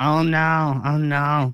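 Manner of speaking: put-on whiny comedian voice. Asking someone if they know a certain bit, do a whiny Kevin Hart voice. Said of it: "the whiny like Kevin Hart voice".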